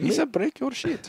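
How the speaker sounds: put-on Indian accent. Imitating a guy who comes to kill you, Indian accent impression. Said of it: "Now he's Indian".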